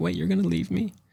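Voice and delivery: acted-out sweet, sorrowful, high little tone. Retelling a movie scene where she pleads as he leaves: imitating a real sweet, sad voice. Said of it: "going real sweet and sad".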